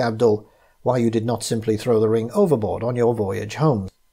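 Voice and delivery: ordinary talk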